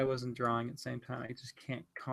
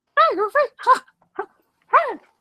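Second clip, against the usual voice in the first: cartoon mouse voice, much higher, louder; 17 dB louder than usual. Speaker trying out cartoon voices while drawing: Mickey Mouse voice. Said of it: "Mickey Mouse".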